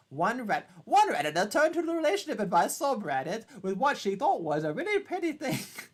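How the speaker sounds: bad Irish accent, high, swooping, drifting into English. Reading out a reddit post, attempting an irish accent that sounds english. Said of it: "Sounds like an English accent".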